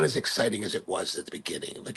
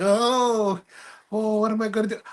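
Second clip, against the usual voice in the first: high whine, long drawn-out "oh"; 7 semitones higher than usual. Describing Luke in Star Wars to a listener: whiny Luke impression. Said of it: "a whiny wimp that's always like".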